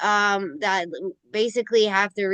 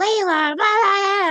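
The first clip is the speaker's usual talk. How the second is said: put-on very high, drawn-out child's screaming fit; 12 semitones higher, 4 dB louder than usual. Retelling a daughter's outburst at Layla during a fight, imitating daughter screaming. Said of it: "just starts screaming at her like".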